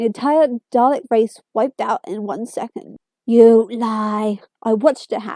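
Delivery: ordinary delivery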